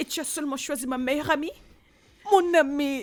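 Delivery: worked up, upset, agitated voice. Arguing with a partner while another voice keeps urging calm: upset and agitated.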